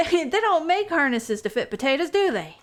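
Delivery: high, put-on southern drawl. Voicing a character teasing a pet: southern accent. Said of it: "the southern accent is, like, conflicting with potatoes".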